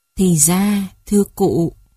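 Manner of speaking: ordinary delivery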